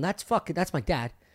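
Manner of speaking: ordinary talk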